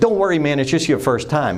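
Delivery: ordinary delivery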